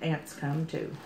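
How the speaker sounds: ordinary delivery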